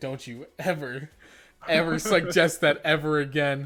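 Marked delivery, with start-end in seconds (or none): none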